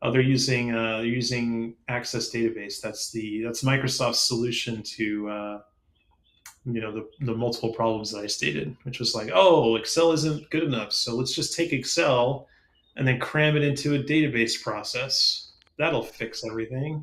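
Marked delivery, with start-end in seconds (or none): 9.3-17.0 play-acted, openly sarcastic tone. Mocking the idea of cramming Excel into a database: sarcastic put-on voice. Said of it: "I'm being sarcastic".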